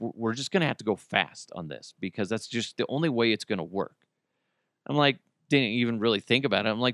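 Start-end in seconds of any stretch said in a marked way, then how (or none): 0.0-3.9 quiet, hushed, half-whispered stage whisper. Retelling what someone said right before action: imitating someone half-whispering. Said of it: "and he whispers".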